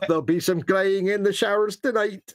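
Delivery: bad put-on Scottish accent. Quoting an old rugby commentator, in a bad Scottish accent. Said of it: "my Scottish accent was terrible".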